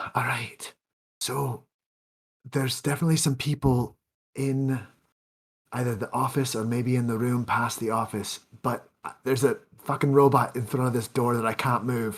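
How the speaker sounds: whisper over walkie-talkie radio. Reporting to the party over a walkie-talkie near a guarded door: whispering over a walkie-talkie. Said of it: "whisper over my walkie-talkie".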